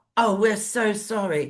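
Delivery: put-on pitiful voice. Speaker mocking people who should lose their pensions, in a mock-pathetic apology. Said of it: "in this pathetic voice".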